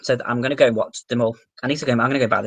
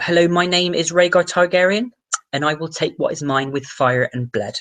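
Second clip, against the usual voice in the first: put-on pitched-up English West Country accent; 5 semitones higher than usual. Imagining a character as being from the West Country, the speaker uses a West Country accent. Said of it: "if he was from like the West Country".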